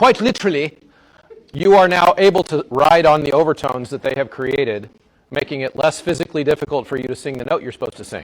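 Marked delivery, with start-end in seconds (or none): 0.0-0.8 pitched-up put-on British accent. Showing how British people say a word: put-on British accent. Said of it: "that's how British people say literally".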